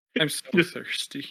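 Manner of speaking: muttering quietly under the breath. Voicing a character who closes his eyes trying magic: muttering under his breath. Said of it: "repeating under his breath".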